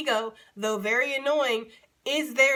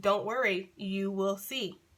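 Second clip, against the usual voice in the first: mock tender, loving, kind, endlessly patient voice; 3 semitones lower, 4 dB quieter than usual. Voicing Spirit answering her questions: imitating Spirit, patient and kind. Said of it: "so patient and so kind and so loving".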